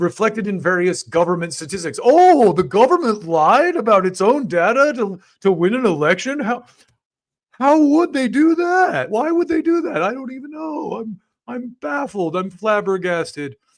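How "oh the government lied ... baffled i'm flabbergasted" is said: slow, high-pitched, drawn-out, feigned bewilderment. Mocking a writer's reaction to government data lies: Paul Krugman impression. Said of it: "This is my impression of Paul Krugman".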